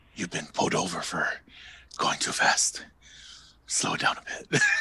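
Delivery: breathy whisper, breathed out, barely voiced. Imitating a sheriff pulling a driver over: Steven Seagal impression. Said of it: "that's what Steven Seagal sounds like".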